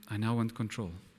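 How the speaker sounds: soft, gentle whisper. Retelling what god whispered one morning in 2017, retelling a gentle whisper. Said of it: "in a very, very gentle whisper".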